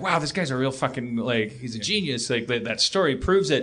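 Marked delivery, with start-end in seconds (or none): none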